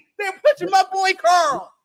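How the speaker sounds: high, loud, excited shout.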